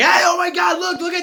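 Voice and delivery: very high, very loud, shrill, sudden shout. Showing what yelling sounds like, as opposed to projecting: demonstrating yelling. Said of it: "I'm not going".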